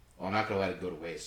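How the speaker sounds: ordinary talk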